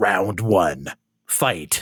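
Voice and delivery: speaking with the voice dropped low. Comparing an anime character to the Tekken announcer, the speaker does: Tekken announcer voice. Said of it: "kinda sounds like the Tekken announcer himself".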